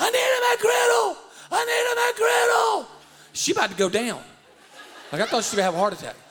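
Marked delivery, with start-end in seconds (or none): 0.0-2.9 very high, stretched-out screaming, acted out. Retelling a woman screaming as the speaker walks up: retelling a scream. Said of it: "she's screaming".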